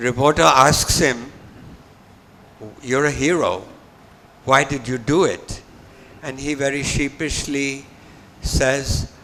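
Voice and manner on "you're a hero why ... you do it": normal talking voice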